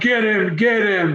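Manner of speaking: light, half-hearted, mild yell, acted out. Retelling a woman quoting the yelling she heard, imitating yelling. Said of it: "I heard you yelling".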